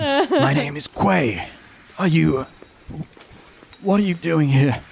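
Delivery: put-on frail elderly man voice. Dm voicing an old earthbending supervisor questioning the players, feeble old man voice. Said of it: "One of the old men who's an Earthbending supervisor turns around and goes, / are old men, and so the earthbending that they're doing is not particularly impressive or strong. They look quite feeble, /".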